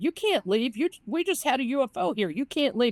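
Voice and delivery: mock screaming. Retelling witnesses begging a man to stay: imitating people screaming. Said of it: "they're screaming at him".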